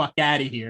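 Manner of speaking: ordinary talk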